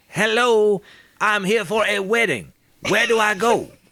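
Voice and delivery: loud, high-pitched bellowing shout. In a role-play, a character takes the invitation and calls out, shouting loudly. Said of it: "I will shout very loudly".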